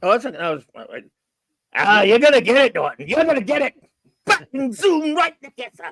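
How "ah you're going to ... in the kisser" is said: very high-pitched, threatening tone. Doing the Honeymooners husband threatening Norton: Ralph Kramden impression. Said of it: "you say that to Alice".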